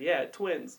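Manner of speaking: acted weepy, tearful, sobbing crying voice. Retelling a crying contestant's words to the host: imitating someone crying. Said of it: "all crying and shit".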